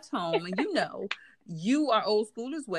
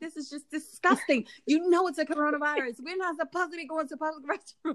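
mock angry scolding, higher; 8 semitones higher than usual. Retelling what she said to the girl she was mad at, retelling angry scolding. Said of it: "I was so mad at her".

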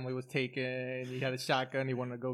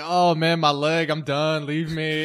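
acted, very slow, defeated, hopeless voice, raised and drawn-out; 3 semitones higher, 10 dB louder than usual. Retelling how a trapped character gave up on life: imitating a defeated giving-up voice. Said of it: "and his voice too".

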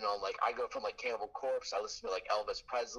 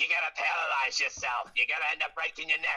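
put-on loud, high little old man voice with Brooklyn accent; 5 semitones higher, 6 dB louder than usual. Retelling the warnings they always heard, in a little old Brooklyn man voice. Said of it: "Sounds like a little old man from Brooklyn".

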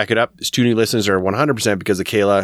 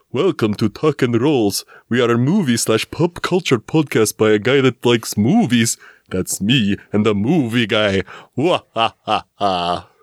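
put-on vampire voice; 3 semitones higher than usual. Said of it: "a mix of Count Chocula and, um, Jason".

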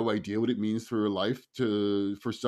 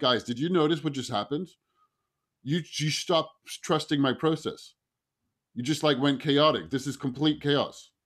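raised, higher-pitched voice; 4 semitones higher than usual. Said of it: "And I just raised my voice".

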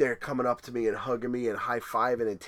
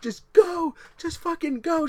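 put-on scream, much higher and louder; 5 dB louder than usual. Speaker retells running while Jen cheers from the side: imitating Jen screaming. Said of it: "and she's screaming".

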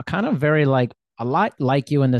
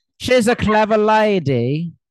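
poor put-on British accent, higher, louder, slower; 9 semitones higher, 5 dB louder than usual. Asked to do their best British accent, the speaker tries: bad British accent. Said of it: "Do your British accent".

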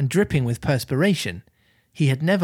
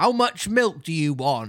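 rustic West Country farmyard voice; 3 semitones higher than usual. Reading a story aloud, speaking as the farmer in a West Country farmer accent. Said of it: "All farmers sound like this".

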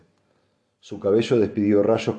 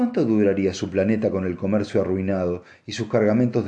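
plain

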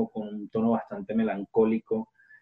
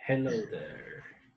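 put-on nerdy voice, much quieter; 8 dB quieter than usual. Greeting the others on a call, saying hello again in a nerdy voice. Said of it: "la voz friki".

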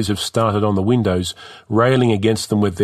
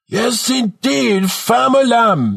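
put-on bellowed, over-the-top Jamaican accent, very high; 13 semitones higher than usual. A 15-year-old standing on a cart's front seats addresses the crowd, bellowing in exaggerated jamaican accent. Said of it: "he bellows in an exaggerated Jamaican accent".

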